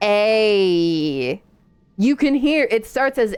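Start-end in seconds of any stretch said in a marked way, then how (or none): 0.0-1.4 the vowel a stretched long, very slow. Showing how the vowel a starts as a and ends with e: very slow drawn-out "a". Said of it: "if you say A really slowly".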